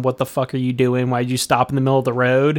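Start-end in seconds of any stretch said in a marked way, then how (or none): none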